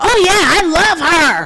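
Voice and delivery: high, loud whisper that fails to stay quiet. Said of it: "He did not know how to whisper".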